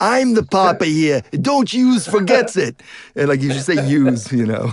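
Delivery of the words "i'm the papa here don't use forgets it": slow, pitched-up, put-on New York accent. Suggesting to a co-reader how a line should go, in a new york accent. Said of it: "there's got to be a New York accent there".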